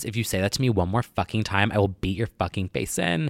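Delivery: mock snapping, threatening tone. Recounting how she snapped at a man making fun of them: retelling someone snapping. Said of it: "Nicole Richie just snaps".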